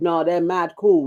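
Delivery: ordinary delivery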